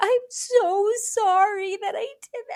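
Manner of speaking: mock tearful crying. Retelling a TikTok where a girl apologizes: imitating someone bawling. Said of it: "she was bawling".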